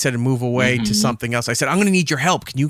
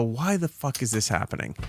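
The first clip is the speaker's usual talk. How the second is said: very quiet mumble under the breath; 3 semitones lower, 9 dB quieter than usual. Retelling going upstairs while a smoke detector chirped, retelling muttering to self. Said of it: "I just mumbled to myself and go".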